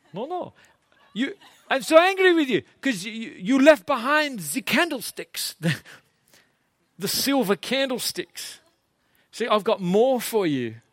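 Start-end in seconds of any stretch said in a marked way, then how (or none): 1.6-10.7 nice, slow, pitched-up put-on French accent. A speaker gives an accent a try on air: nice French accent. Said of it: "he says in a nice French accent".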